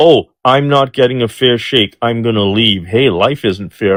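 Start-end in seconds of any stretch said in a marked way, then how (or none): none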